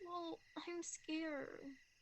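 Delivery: tearful voice, talking while crying. Admitting fear of forever to another speaker, crying while talking. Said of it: "Are you crying?".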